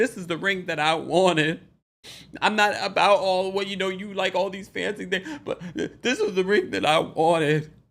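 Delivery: wobbling crying voice. Retelling a reality-show moment about a ring, imitating Candy's shaky crying voice. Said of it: "into the shaky crying voice".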